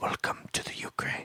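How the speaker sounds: very soft, hushed whisper, very close up. Retelling what a stripper said into someone's ear: imitating a whisper. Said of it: "just whispers".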